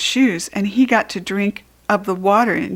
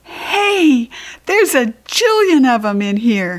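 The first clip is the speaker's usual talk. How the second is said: delighted, excited exclamation, swinging pitch, stretched out; 3 semitones higher than usual. Narrator voices the character seeing all the library's books: excited hollering. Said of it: "I hollered, feeling very excited".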